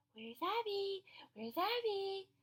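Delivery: put-on very slow, sweet, high little baby voice. Retelling what she said, imitating a sweet baby voice. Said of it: "she got this really like sweet voice".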